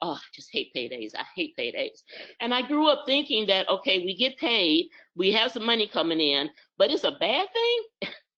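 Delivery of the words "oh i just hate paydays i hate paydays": put-on mutter under breath, lower and quieter. Retelling what mother said on paydays: imitating muttering under breath. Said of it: "she always kept saying under her breath".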